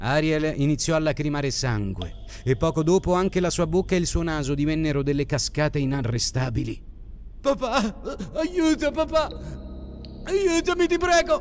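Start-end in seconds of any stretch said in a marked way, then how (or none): 7.4-11.4 very high, strangled, choked, dragged-out shriek. Narrator reading a bleeding character begging her father for help, choked scream. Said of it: "urlò strozzata dall'emorragia".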